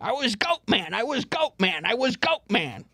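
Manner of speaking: high, slow goat-man voice with stretched-out words. Joking about doing Jim Breuer bits: imitating Jim Breuer's Goat Boy. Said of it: "I would love to start doing Breuer stuff".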